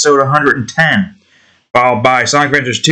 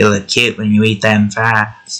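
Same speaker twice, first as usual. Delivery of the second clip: put-on sassy voice, pitched lower; 5 semitones lower than usual. A speaker tries again to imitate someone's very specific voice, imitating a sassy voice. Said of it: "but with a little bit more sass to it".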